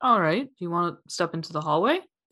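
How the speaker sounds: plain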